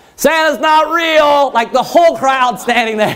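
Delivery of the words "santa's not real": play-acted high, shouted yell. Retelling how a boy yelled at the crowd waiting to see Santa: retelling a yell to a crowd. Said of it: "he just yells like to the whole crowd".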